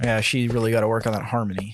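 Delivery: low mumbling under breath. Voicing a character who walks away down an aisle: muttering. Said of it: "he just kinda mutters".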